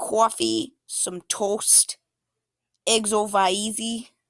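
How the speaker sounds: slow, drawn-out, put-on New York accent. Giving slide examples of regional talk for new york: new york accent. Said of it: "some examples of New York would be".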